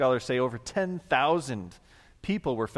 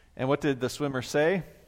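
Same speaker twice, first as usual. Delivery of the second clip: usual speaking voice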